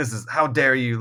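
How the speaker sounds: ordinary talk, nothing marked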